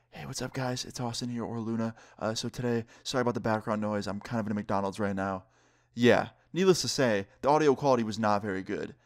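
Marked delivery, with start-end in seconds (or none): 0.1-5.4 hushed, soft, kept-down voice. Retelling recording a video in a McDonald's: re-enacting own half-whispering. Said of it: "I'm sitting there basically whispering".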